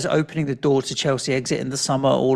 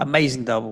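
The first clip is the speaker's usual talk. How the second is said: ordinary talk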